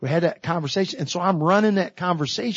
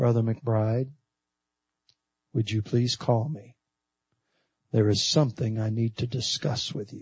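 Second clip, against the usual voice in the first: put-on grave, very serious, low voice; 8 semitones lower, 4 dB quieter than usual. Retelling a preacher's answering-machine message, imitating a serious voice. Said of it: "in a very serious sounding voice".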